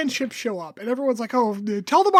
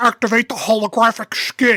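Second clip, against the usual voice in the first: grand, theatrical, over-the-top dramatic line reading; 3 semitones lower than usual. Retelling what the Romulans say: imitating an overly dramatic delivery. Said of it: "he says it like it's real dramatic".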